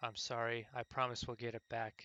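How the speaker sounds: shaky, hushed, pleading half-whisper with a tremble. Reading a game's story aloud, a character hugging an old man: trembling half-whisper. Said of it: "in a trembling voice she whispered".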